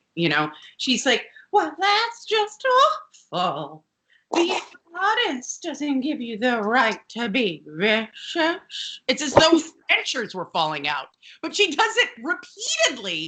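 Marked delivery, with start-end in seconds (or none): 1.6-9.0 breathy, sibilant voice of disapproval. Retelling a sitcom scene: imitating Mrs. Garrett's low breathy disapproval. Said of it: "low, breathy, sibilant voice of disapproval".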